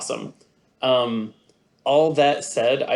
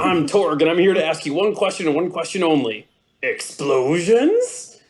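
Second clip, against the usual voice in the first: mock brutish character voice; 5 semitones higher, 3 dB louder than usual. Retelling Mister Torg's first line interrupting a mission briefing: Mister Torg voice. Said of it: "I'm gonna do the voice".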